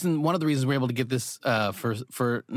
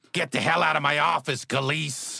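raspy, scratchy, rough character voice. Performing a fun character voice for a project, in a scratchy voice. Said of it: "this scratchy voice like this".

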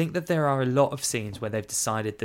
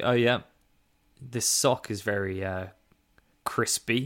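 plain

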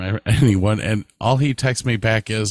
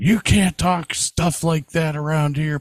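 high, furious screaming, blowing up in anger; 6 semitones higher than usual. Retelling how a man went off over a joke: retelling a screaming rant. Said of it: "starts screaming".

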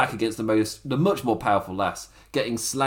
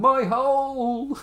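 very high, pained, drawn-out yell; 13 semitones higher than usual. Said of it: "just shouting".

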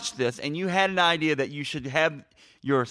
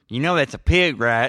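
loud, terrible put-on Texas accent; 2 semitones lower, 5 dB louder than usual. Retelling a story where Vanderbeek questions another man about his pig, worst Texas accent. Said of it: "in his worst Texas accent".

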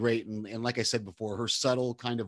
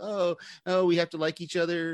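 mock-sarcastic, mocking tone, higher; 7 semitones higher than usual. Describing a show scene, quoting a character's reply to the AD: retelling a mocking remark. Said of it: "Starlight kind of mockingly or sarcastically says".

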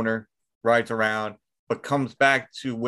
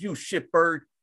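mock, all worked-up angry, pissed-off outburst, pitched up; 6 semitones higher than usual. Retelling a movie scene where the character gets pissed off: imitating Marlboro Man angry. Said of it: "he gets all pissed off".

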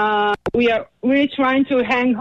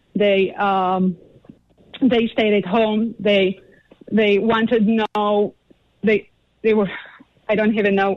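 overcome, emotional voice with halting, faltering words. Describing how the parents grew depressed and stayed home: emotional. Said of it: "I'm so emotional".

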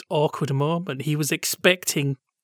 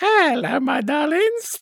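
very high, pitched-up voice; 11 semitones higher than usual. Retelling a pantomime entrance: Charlie Drake impression. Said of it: "That was my Charlie Drake impression".

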